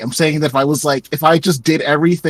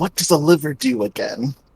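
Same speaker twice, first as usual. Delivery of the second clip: loud stage whisper meant to carry across; 3 dB quieter than usual. Leaning over to ask someone a question, loud whisper. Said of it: "I'm gonna whisper very loudly to life".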